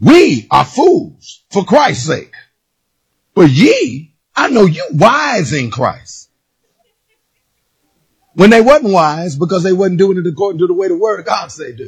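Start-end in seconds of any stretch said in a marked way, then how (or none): 0.0-6.3 mock heavy, sneering sarcasm, slow and sing-song. Retelling words spoken to doubters, imitating a sarcastic tone. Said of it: "started talking sarcastically to him".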